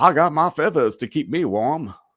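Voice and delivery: high cartoon voice with heavy southern accent. Show listeners how a board member talks by quoting the cartoon, in a Foghorn Leghorn voice. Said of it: "He talks like Foghorn Leghorn".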